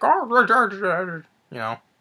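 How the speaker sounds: goofy swooping talk, oh drawn out. Imitating an actor who talks with marbles in his mouth: imitating Jeff Bridges' mumbling. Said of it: "he talks like this".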